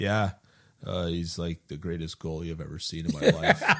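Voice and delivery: mock dry, very low, flat monotone deadpan. Retelling what Darryl Sutter said when asked about a goalie, imitating Darryl Sutter's deadpan. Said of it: "Daryl Sutter said totally deadpan".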